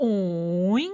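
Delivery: falling-rising tone on 오잉. Teaching children to mark tones with a sound: 오잉 dipping then rising. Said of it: "내려갔다 올라가면서 오잉".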